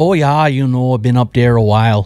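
Canadian way of talking, put on. Host answers whether he has ever lived in Wisconsin, in a Canadian accent. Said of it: "I don't know what accent that was. Canadian, I think".

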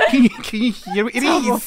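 high, laughing, fake Australian accent.

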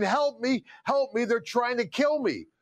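desperate, frantic, half-yelled pleading. Retelling how a man held down on the ground at gunpoint called out, imitating a man screaming. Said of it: "And he's screaming".

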